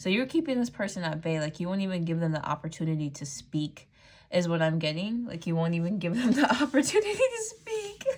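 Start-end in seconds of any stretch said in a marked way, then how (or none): 5.5-8.1 high, loud speech breaking up with laughter. Repeating a message back to the listener, the speaker is laughing while talking. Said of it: "I'm just laughing".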